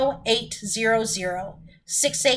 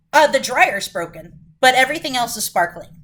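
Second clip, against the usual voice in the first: ordinary talk, nothing marked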